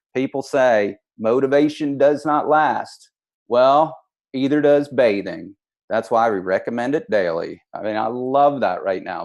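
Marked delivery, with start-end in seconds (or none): 0.2-7.6 terrible fake Southern accent with put-on drawl. Speaker shows off a quote in a terrible fake Southern accent. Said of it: "I have a terrible fake Southern accent. But it goes something like this".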